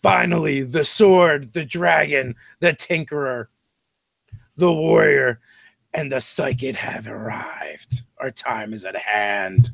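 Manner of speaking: grand, proclaiming, herald-like announcing voice. Game master voices a speaker greeting the party as they enter the chamber, booming voice. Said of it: "A booming voice".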